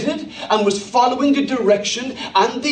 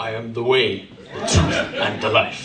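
put-on very low voice with broken-English accent; 13 semitones lower than usual. An actor playing Jesus delivers the line; broken-English Jesus accent. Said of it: "the broken English Jesus accent".

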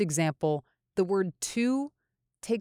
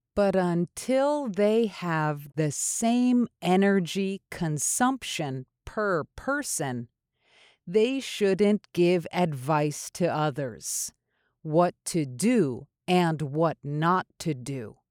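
very slow, careful, word by word. Repeating the sentence of the day one more time, a little more slowly. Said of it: "one more time, a little more slowly".

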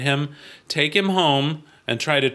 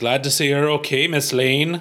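clumsy, poor put-on Irish accent. Reading a comic aloud, voicing Officer Daly: attempted Irish accent. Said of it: "I can't do an Irish accent".

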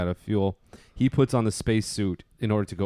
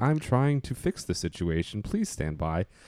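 calm, gentle female computer voice, sing-song swoops. Imitating the ship's computer from a film being discussed: gentle rational female computer voice. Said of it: "female voice, like, gentle ship's computer".

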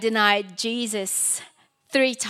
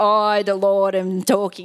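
slow, deliberate put-on voice; 2 semitones lower, 4 dB louder than usual. Reading the Bible aloud so they really listen, in a put-on voice of God. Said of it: "I had to put on the voice".

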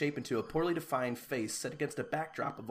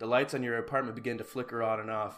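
normal talking voice

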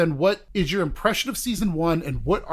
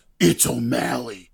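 put-on scary voice, much lower; 5 semitones lower than usual. Recapping a show's season ending, quoting the reveal in a scary O'Malley voice. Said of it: "And he's got a scary voice".

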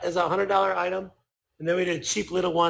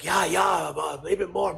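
slow, fake, put-on Japanese accent. Retelling how the game's makers answered about its sales, put-on Japanese accent. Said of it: "here's my japanese accent".

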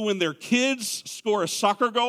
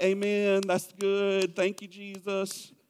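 soft, slow, half-hearted, lukewarm; 2 semitones lower, 5 dB quieter than usual. Mocking a half-hearted church response to the gospel: imitating a lukewarm golf-clap response. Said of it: "a little golf clap of like".

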